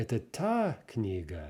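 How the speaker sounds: sharp upward pitch jump landing on та. Teaching Russian question intonation on the main word: sharp rise on та. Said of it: "Rising very sharply, very noticeably on whatever the, the main question, the main word is in the question".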